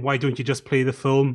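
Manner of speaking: ordinary delivery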